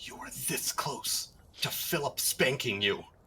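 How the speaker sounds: soft, barely voiced whisper. Casting Sending to message another character in the game: whispering. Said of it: "And I'm just gonna whisper".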